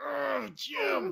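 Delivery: high, rough emotional grunt. Predicting how often a commentator says Jim: Tony Romo impression. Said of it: "some emotional grunt and Jim".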